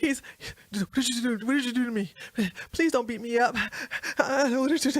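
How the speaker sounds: mock-scared, pleading frightened man voice. Retelling a confrontation, imitating the man who backed down, mocking a scared plea. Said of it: "He's shaking a little bit".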